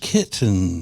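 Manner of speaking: "kitten" with the T strongly stressed. Showing how a pet name must be said: stress on the t in kitten. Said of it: "you stress the T".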